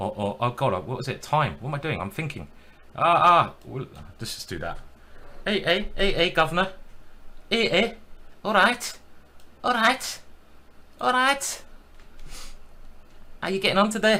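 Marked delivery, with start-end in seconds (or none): 5.5-14.2 very high, failed attempt at a Scouse accent. Attempting a Scouse accent he admits he can't do, failed Scouse accent. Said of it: "That's not Scouse".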